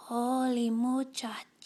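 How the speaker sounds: very quiet, barely-there, drawn-out voice. Narrator reads Skippy John Jones's reply as everyone cries his name: very soft voice. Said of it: "he said in a muy, muy soft voice".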